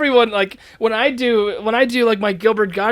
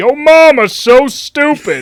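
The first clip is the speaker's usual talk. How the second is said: loud, slow, drawn-out, swooping delivery; 3 semitones higher, 7 dB louder than usual. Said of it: "you literally just do Joe Swanson".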